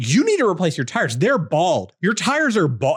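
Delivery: put-on urgent, frantic yelling. Retelling a man at a red light calling across the intersection, imitating him yelling. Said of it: "He's like yelling across the intersection".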